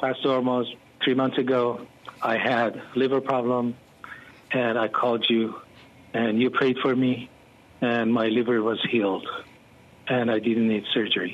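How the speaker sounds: mock flat, toneless, emotionless voice. Retelling a caller's testimony on a live broadcast: imitating his emotionless voice. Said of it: "He had no emotions in his voice".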